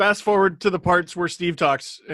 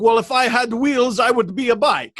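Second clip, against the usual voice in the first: put-on Italian chef accent, pitched high; 6 semitones higher than usual. Retelling the italian chef's reply to the talk show lady: imitating italian chef accent. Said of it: "bibbidi bobbidi" accent".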